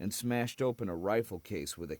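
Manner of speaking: ordinary delivery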